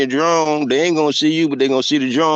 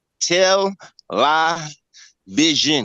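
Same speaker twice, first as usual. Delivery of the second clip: tell, lie, vision, each word set apart. Showing how to break a word into three parts: split into three separate words. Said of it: "now make it into three words".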